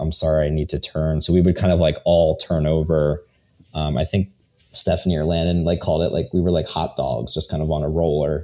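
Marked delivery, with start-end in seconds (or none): 0.0-1.2 whispered voice. Retelling apologizing at night to the people on either side: retelling a whisper. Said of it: "whispering to them".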